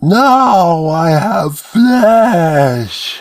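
put-on terrible child-pitched, resonant, slobbering monster voice. A narrator voices a terrible creature's first words: resonant yet childlike high voice. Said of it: "A terrible voice, deeply resonant yet high-pitched as a child".

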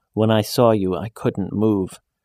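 plain reading voice

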